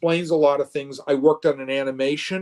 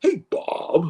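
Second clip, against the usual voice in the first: casual, offhand, his usual natural way; 3 semitones higher than usual. Retelling a morning phone call, imitating Todd Stashwick's greeting. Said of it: "like that. He just, like, that's how he talks".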